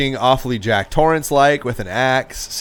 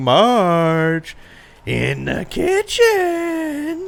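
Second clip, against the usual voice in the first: put-on playful calling voice, higher pitched; 10 semitones higher than usual. Retelling a scene where a character calls to Marge: imitating Homer calling playfully. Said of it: "he's calling to Marge, like, playfully".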